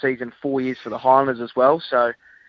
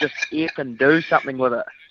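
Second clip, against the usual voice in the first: normal talking voice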